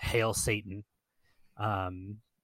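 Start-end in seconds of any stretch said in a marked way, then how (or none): none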